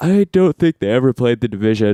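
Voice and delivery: speech spoken mid-yawn. Co-host answers a question on a podcast, yawning while talking. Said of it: "Sorry to yawn right into the mic".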